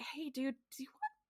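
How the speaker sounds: worried voice, high and careful.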